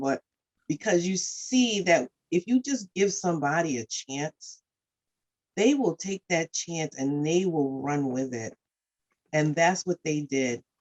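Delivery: emotion rising through the words, moved. Describing people who came through the warming center, getting emotional. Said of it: "I'm getting emotional".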